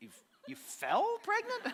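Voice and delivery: stunned, disbelieving, high incredulous gasp.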